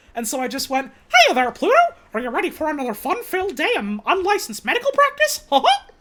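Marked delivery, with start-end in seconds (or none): 1.1-5.8 high, loud cartoon voice with swinging pitch. Retelling a cartoon impressions bit with a coworker: Mickey Mouse impression. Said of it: "I can do a pretty okay Mickey Mouse impression".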